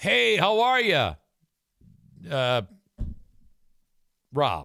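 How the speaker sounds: slow, drawn-out, sing-song voice. Acting out a scammer calling an older person for money: acting out a phone scammer. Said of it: "the voice on the other end says".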